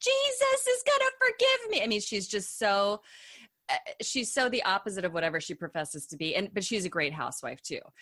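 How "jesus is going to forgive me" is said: play-acted, very high-pitched, shrill screaming. Mocking a housewife who screams at people, imitating Tamra screaming. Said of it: "she screams like".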